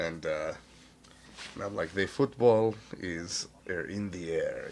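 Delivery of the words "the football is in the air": slow, deliberate, put-on Russian accent. Retelling code-phrase phone calls with a friend: put-on russian accent. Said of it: "long conversations in Russian accents".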